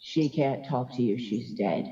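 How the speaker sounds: darkest, deepest, very low voice. Retelling the voice that answered the speaker's screams for Ashley: darkest, deep voice. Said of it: "the most darkest, deep voice say".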